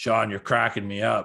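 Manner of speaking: voice dropped very deep. Retelling a line said to Sean: very deep Rick Rude voice. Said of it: "in his very deep Rick Rude voice going".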